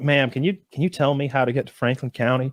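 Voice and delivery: ordinary talk, nothing marked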